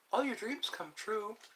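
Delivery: derisive, taunting delivery in a high mocking tone. Speaking to Eddie about his subscriber count, in a mocking tone. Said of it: "I'm saying that with a mocking tone".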